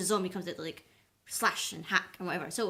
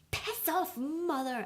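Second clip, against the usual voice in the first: put-on high scream, English accent laid on thick; 9 semitones higher than usual. Retelling a scene where Lizzie screams back at her mother; very English-accented scream. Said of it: "in the most English accent I've ever heard".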